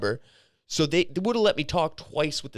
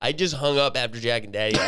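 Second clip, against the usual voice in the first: ordinary talk, nothing marked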